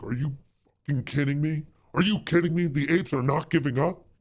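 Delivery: high, frantic freak-out, total disbelief. Imagining a boss snapping his putter in rage: imitating Ken Griffin freaking out. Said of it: "Ken is there just, like, freaking out".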